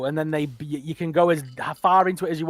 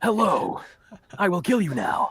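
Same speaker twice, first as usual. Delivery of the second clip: bad English anime dub delivery, swooping pitch; 2 semitones higher than usual. Complaining about English anime dubs in a chat about subtitles, imitating English anime dubs. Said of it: "They always talk like this".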